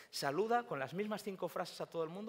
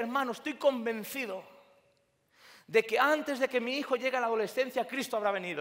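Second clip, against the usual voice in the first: high, full-power, enthusiastic declaration, acted out; 5 semitones higher, 10 dB louder than usual. Recalling what he told a brother fresh out of seminary: retelling a full-power declaration. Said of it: "salí con todo el poder y dije".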